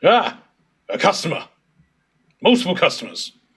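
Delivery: bored voice suddenly perking up into eager excitement. A game master voices a bored dwarf shopkeeper spotting customers: suddenly excited dwarf shopkeeper. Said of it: "an incredibly bored-looking dwarf just suddenly jerks up and goes".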